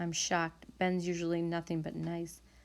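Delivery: plain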